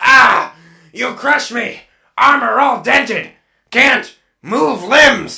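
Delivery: high, choppy, halting word-by-word stilted delivery. A character in crushed, dented armor addresses the detective, in stilted, choppy speech. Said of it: "must talk like this".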